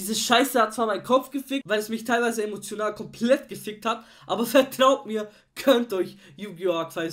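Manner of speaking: very loud, excited shouted urging. A YouTuber urging viewers to watch a show, getting loud. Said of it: "sorry, dass ich so laut wurde".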